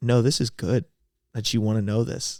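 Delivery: ordinary delivery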